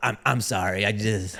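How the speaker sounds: usual speaking voice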